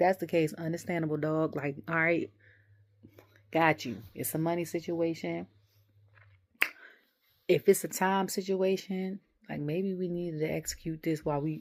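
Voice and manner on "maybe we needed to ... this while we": ordinary talk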